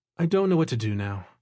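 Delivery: ordinary delivery, nothing marked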